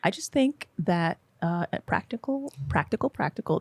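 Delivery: slow, poised, deliberate, composed way of talking. Imitating the other speaker's usual manner: imitating a friend's poised way of speaking. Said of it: "You're just like".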